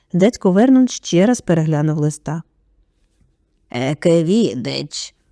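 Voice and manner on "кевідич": barely audible grumble under the breath. Uncle Vernon rereads the letter and grumbles one word, barely audible mutter. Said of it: "ледь чутно буркнув він".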